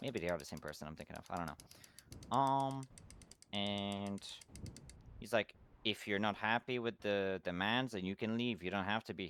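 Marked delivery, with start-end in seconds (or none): none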